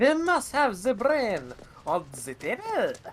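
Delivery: put-on poor German accent. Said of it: "It was a bad German accent".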